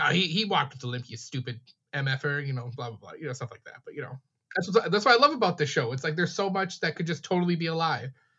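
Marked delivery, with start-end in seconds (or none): none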